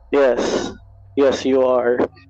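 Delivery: icy, dark, cold delivery. Raising a mace over someone in a game scene: dark, cold voice. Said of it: "I just say in a dark, cold, uh, voice".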